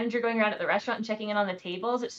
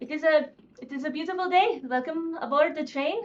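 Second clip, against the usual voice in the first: thick fake Eastern European accent, rolled r's, pitched up; 6 semitones higher than usual. Voicing a train conductor welcoming passengers: put-on eastern european accent. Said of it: "thick, roll the R's".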